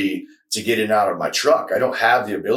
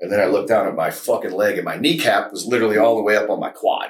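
ordinary talk

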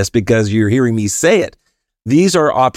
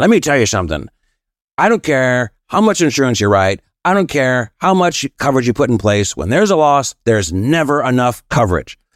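raspy voice of a longtime smoker; 2 semitones higher than usual. Retelling what an older teacher said, imitating a raspy smoker's voice. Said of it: "know raspy voice".

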